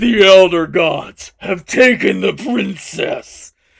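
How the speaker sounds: thunderous, booming, very loud god voice. Narrating a mighty deity shouting at an army of goblins, in a booming voice. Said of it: "in a booming voice you heard".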